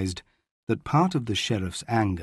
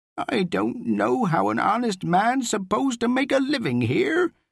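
very high, swooping, whining voice; 12 semitones higher than usual. Rhys, a shopkeeper accused of watering his wine, speaks, whining. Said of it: "he whined".

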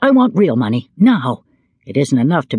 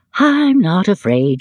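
slow, stretched-out, higher-pitched drawl; 5 semitones higher than usual. A mother answers her boasting son, drawling. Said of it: "she drawled".

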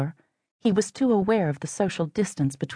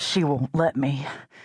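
panting, out of breath, slower; 3 semitones lower than usual. A man answers the woman struggling against him, panting. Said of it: "he panted".

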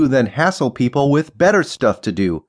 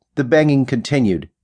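ordinary delivery

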